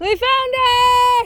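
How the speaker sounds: very high, slow, drawn-out excited cheer.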